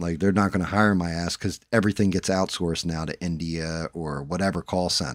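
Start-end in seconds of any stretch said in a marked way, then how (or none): none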